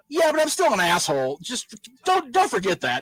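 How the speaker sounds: put-on brash, cocky wrestler voice, swooping high. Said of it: "Sean Babyface was still like".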